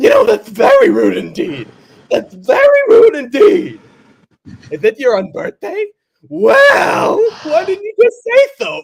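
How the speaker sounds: shrill, very high, very loud clownish voice. Acting out a scene, speaking as the Mad Hatter: Mad Hatter voice. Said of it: "the Mad Hatter's like".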